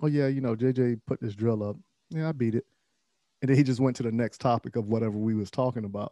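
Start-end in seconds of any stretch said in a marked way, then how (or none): 0.0-2.7 mock-casual, offhand, nonchalant tone. Speaker acts out what he said one day, retelling a nonchalant remark. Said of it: "he said it nonchalantly one day".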